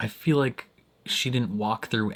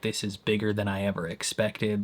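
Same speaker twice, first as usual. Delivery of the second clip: plain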